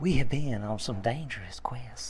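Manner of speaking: put-on deep, very soft, genuine Southern accent. Showing the others how the line should sound, in a real Southern accent. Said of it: "Like the real Southern".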